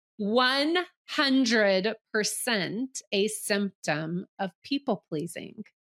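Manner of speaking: very slow pace. Telling listeners to take a sentence really slow, really slow. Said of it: "So go really slow".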